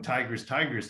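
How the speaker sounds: normal talking voice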